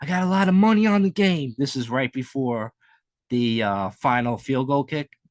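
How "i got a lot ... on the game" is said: put-on mimicked young, worried voice, higher and louder. Imitating a young fan with money on the game: imitating a young fan's voice. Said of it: "he had that, like, voice".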